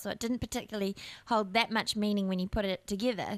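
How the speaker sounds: ordinary talk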